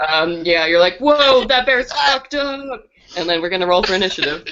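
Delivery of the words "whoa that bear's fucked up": very slow, high, drawn-out, spooked, scared outburst. Voicing a frightened character facing a rabid bear: acted scared exclamation. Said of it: "we're real scared".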